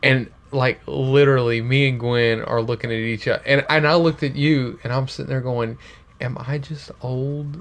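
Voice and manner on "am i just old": very slow, very quiet, hushed half-whisper. Retelling asking another person a question secretly: imitating own half-whisper. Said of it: "I'm whispering so that he doesn't see".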